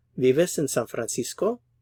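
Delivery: gentle, slight upward pitch lift on Francisco. Spanish lesson example question: slight rise on Francisco. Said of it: "for a question, the intonation rises a little bit towards the end".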